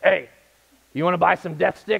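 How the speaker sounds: rough, creaky, strange-sounding voice. Retelling an Obi-Wan bar scene, voicing the stranger who approaches: impersonating the bar stranger. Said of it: "That's my best impersonation".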